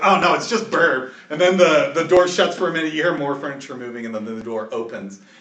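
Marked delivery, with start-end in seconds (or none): 0.0-1.1 loud, called-out shouting. Voicing a townsperson behind a door who shouts: shouting. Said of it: "somebody shouts".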